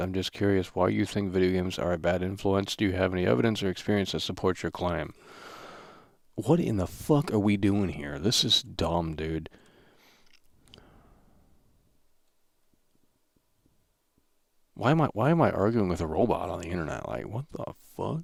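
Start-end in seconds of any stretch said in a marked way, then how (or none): 6.4-18.2 fed-up, incredulous, exasperated, upset outburst. Arguing with a chatbot on the internet: getting upset. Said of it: "I'm actually getting upset with this thing".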